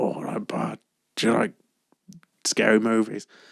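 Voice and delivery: low, rasping, deep, gravelly phone-like voice. Retelling the caller ringing up in a horror film's opening, deep gravelly voice. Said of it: "a deep gravelly voice".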